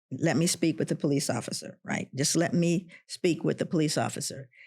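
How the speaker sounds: usual speaking voice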